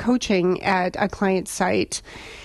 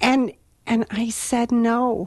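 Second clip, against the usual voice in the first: normal talking voice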